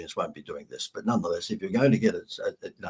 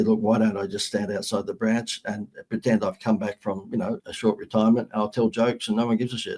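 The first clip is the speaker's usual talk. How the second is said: normal talking voice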